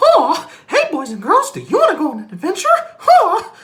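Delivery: exaggerated cartoon-like swinging pitch. Recalling childhood imitations, greeting boys and girls in Mickey Mouse voice. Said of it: "imitating Mickey Mouse".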